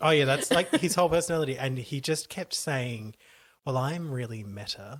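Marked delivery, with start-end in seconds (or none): 3.6-5.0 put-on empty-headed, vapid American accent. Retelling what a millionaire kept saying, in a vapid American accent. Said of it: "but in like a vapid American accent".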